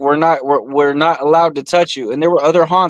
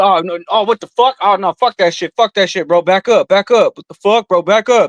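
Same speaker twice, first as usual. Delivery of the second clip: mock frantic, scared, panicked crying out; 4 semitones higher than usual. Retelling how the loudest guy reacted in the haunted house: imitating a panicked guy crying out. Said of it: "the loudest crying bitch would be".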